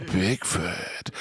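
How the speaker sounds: sinister, spooky, menacing voice. Introducing a guest by name, menacing, like I'm coming to get you. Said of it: "that sounded more like I'm coming to get you".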